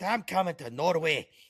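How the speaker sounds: put-on Scottish accent, pitched high. An American Texan doing a line in a Scottish accent: Scottish accent. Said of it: "in a Scottish accent".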